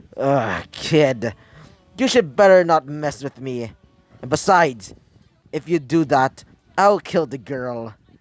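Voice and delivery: plain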